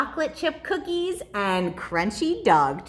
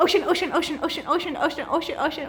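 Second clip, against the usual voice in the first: rattled off very fast, pitched up, rapid-fire; 6 semitones higher than usual. Leading a rhyme game, repeating the word as fast as possible. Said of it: "Let's say ocean as fast as we can".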